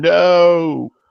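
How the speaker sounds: put-on high, loud, stubborn childlike scream.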